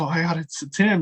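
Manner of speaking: trembling, nervous, shaky, flustered, starstruck voice. Retelling walking up to meet a wrestler: imitating nervous, shaky voice. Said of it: "so nervous and shaky 'cause I'm like".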